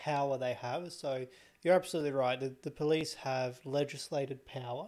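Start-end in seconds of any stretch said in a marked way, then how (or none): none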